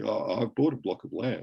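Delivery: put-on anxious, uneasy, nervous little voice. Retelling a phone call from his wife: imitating someone speaking nervously. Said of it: "she said very nervously".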